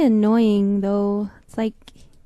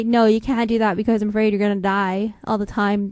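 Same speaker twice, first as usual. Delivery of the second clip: usual speaking voice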